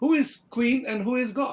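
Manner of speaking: high-pitched, put-on Indian English accent. Retelling a joke about colonial india, the speaker voices the indian man in a put-on indian accent. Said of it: "the Indian asked in Indian accent".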